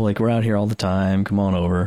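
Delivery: mock-casual, put-on casual tone. Describing how casual an alien version of Boston seemed: mock-casual. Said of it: "Just totally casual".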